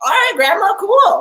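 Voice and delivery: very high, bright-eyed, breezy easygoing tone. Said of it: "I was like".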